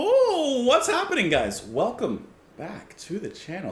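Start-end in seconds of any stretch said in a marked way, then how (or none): 0.0-1.6 full-on yell, very high and swooping. Greeting viewers at the start of the channel's video: yelling. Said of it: "Sorry for yelling at you".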